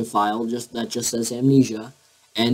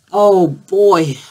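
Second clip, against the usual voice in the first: forced, faked cheerful voice, high-pitched and loud; 8 semitones higher, 8 dB louder than usual. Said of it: "try and sound as happy as I can".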